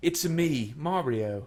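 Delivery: put-on, fake-sounding British accent. In an impressions game, a player gives the suggested line in a british accent.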